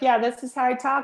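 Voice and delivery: flat, two-note monotone voice. Speaker imitates how most people talk, using two notes; flat monotone voice. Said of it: "88 notes on a piano, and most people are using 2".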